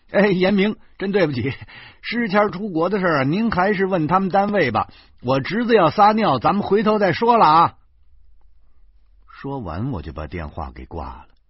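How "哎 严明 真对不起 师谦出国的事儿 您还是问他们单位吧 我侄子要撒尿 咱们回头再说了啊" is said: very high, loud shout. The narrator, holding the pardon, calls Yan Ming on the phone, shouting into the phone. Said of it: "我马上向电话里喊".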